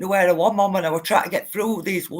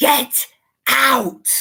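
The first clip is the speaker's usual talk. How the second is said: mock sudden, shrill, loud screaming; 6 semitones higher, 5 dB louder than usual. Retelling a story of a voice in the dark: imitating a screaming voice.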